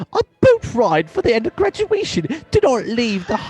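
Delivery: put-on very high, sing-song, swooping British accent. Complaining about a graduation boat ride, speaker slips into a british accent. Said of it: "I realize I'm doing a British accent".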